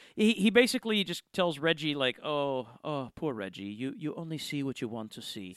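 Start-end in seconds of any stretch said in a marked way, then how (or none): 2.3-5.6 subtle, understated put-on German accent, quieter. Quoting what a character tells Reggie, in an understated German accent. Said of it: "German, but it's a little more understated".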